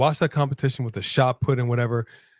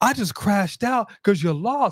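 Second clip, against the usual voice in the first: mocking imitation of wrestler voice, pitched higher; 7 semitones higher than usual. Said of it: "And you're over here talking about".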